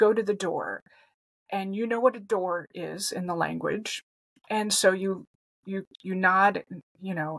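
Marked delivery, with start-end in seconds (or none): none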